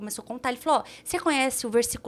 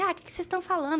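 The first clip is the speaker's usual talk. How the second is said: super aggressive, pitched-up voice; 6 semitones higher than usual. Retelling how a very high man spoke to the group: imitating an aggressive man. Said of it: "super agressivo".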